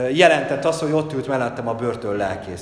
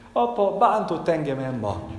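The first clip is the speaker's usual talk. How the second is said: put-on crying child voice; 4 semitones higher than usual. A father retells his son coming to him in tears: imitating Mánuel crying. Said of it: "odajön sírva hozzám Mánuel".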